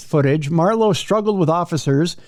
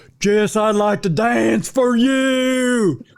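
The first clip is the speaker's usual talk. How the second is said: creepy, high, very slow voice, "you" drawn out; 5 semitones higher than usual. Voicing the man in the booking photo, imitating the man. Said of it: "kinda going".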